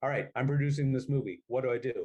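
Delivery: ordinary delivery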